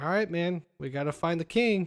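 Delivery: ordinary delivery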